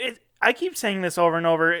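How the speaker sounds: ordinary talk, nothing marked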